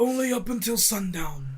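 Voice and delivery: terse put-on voice. Imitating an actor's short lines from a movie: Stephen Lang impression. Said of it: "pretty close to what he sounds like".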